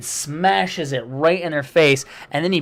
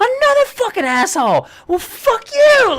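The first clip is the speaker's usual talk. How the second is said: put-on furious Australian accent, very high and loud; 6 dB louder than usual. Retelling a guy's reaction to another honk, imitating a furious Australian guy. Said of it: "He's getting real pissed".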